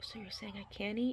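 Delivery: hushed whisper. Retelling asking the same question a third time, whispered. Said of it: "I whispered it".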